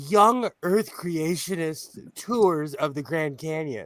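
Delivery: laughing, words broken up by laughs. Naming a kind of tour while trying not to laugh: laughing while talking. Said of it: "I can't say it without laughing hysterically".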